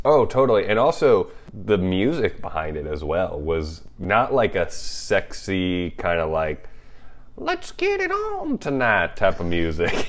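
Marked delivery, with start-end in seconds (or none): 7.4-9.2 put-on very high, sing-song, creepy old man voice. Describing the music behind a scene, joking in a creepy old grandpa voice. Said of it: "I just made like a creepy old grandpa voice there".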